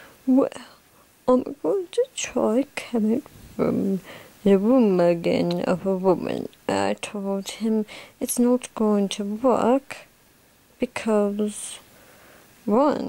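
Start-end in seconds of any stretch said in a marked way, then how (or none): 0.3-6.5 scornful, derisive mocking put-on man's voice. Telling a story, quoting a man in a mocking imitation of his voice. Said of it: "this is me just mocking his voice".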